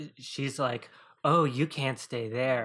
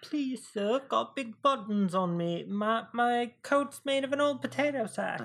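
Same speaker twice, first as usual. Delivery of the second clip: very high, squeaky, begging orphan voice; 10 semitones higher than usual. Joking about characters in a film recap: Oliver-style orphan voice. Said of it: "Like Oliver style orphan".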